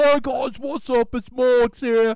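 put-on English accent, very high, loud, slow, belted. Imitating a YouTuber from England greeting his viewers: Morgs impression with English accent. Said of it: "He's from England".

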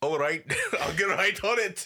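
put-on Scottish-accented voice. Imagining the actor answering a voice-coach remark, Sean Connery impression. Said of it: "this is a Scottish person doing a Spanish accent".

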